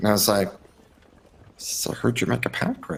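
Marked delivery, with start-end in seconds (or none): 1.6-3.0 soft, close, private whisper. Leaning close to another character and asking a question: whispering to a character. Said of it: "whisper at her".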